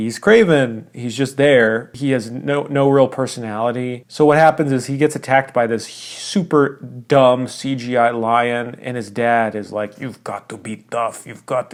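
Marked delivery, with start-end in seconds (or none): 10.0-11.7 put-on understated Russian accent. Recapping a movie, the speaker quotes the hero's dad in a Russian accent. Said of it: "he says this Russian accent".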